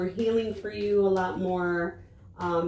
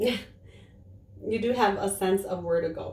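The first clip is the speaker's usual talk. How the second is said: slow delivery, giggling through the words. Speaker hears their son sneeze mid-talk and repeats a point, giggling while speaking. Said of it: "I'm just giggling".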